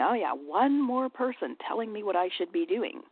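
irritated, frustrated, snarky sarcastic grumble. Acting out the inner voice of a smoker hearing advice, mock frustrated and snarky. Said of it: "frustrated, snarky, angry voice inside of him going".

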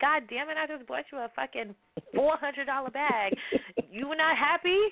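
put-on high, furious angry shouting. Retelling how they yelled at people over gifts, retelling yelling at people. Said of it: "I'm like yelling at people like".

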